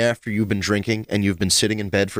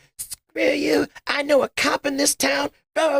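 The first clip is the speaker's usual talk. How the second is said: put-on, very high, shrill, defiant screaming. Describing a woman surrounded by police, acting out her outburst: imitating someone screaming. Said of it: "She's just standing there screaming".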